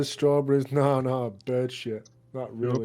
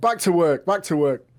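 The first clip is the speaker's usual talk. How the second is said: loud, shouted delivery; 4 semitones higher, 6 dB louder than usual. Casting an illusion to sound like another cultist: shouting like another cultist. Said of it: "I wanna shout".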